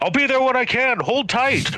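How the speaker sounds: very high-pitched hollered call. Voicing Orson Calder calling out to allies mid-fight: hollering. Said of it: "he just hollers out".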